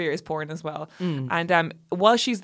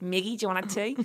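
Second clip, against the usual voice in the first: put-on Australian accent; 5 dB quieter than usual. Retelling a scene, the speaker quotes a woman offering tea: australian accent. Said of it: "that's my Australian accent".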